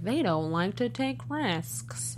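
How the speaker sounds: mock monotone delivery. Discussing a show with co-hosts, quoting how he said it: imitating a flat delivery. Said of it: "he said it kind of flat".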